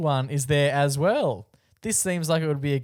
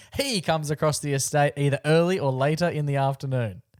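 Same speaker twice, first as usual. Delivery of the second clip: ordinary talk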